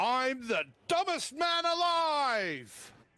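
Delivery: overdone dramatic delivery. Acting out a meme's first voice for the others: overacted dramatic delivery. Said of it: "William Shatner school of overacting".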